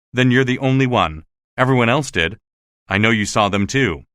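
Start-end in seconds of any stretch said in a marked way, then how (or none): none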